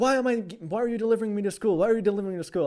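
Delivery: angry but joking, pitched high. Retelling own question to mom in the car: imitating own angry joking tone. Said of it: "kinda joking, but, like, a-, angry, joking way".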